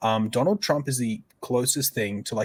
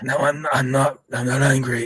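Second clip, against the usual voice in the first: husky put-on voice, louder; 3 semitones higher, 5 dB louder than usual. Imitating how RFK talks: husky RFK impression. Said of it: "It is very husky".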